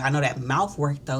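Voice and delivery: plain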